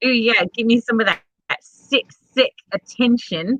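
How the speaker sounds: put-on New Zealand accent. Imitating girls who romanticized being sick: new zealand accent. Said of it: "I can do New Zealand, but not Australia".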